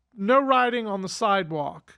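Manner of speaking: usual speaking voice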